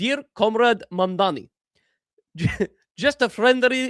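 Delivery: attempted Russian accent. Addressing a dear comrade in a message, put-on russian accent. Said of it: "let me throw on my best Ru- Russian accent for this".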